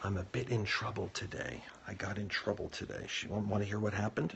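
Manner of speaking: keeping voice down, quiet. Because someone in the house went to bed, the speaker keeps their voice down. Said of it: "so I have to keep my voice down".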